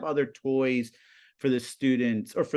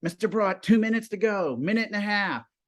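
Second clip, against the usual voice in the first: high, loud calling out. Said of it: "the students like".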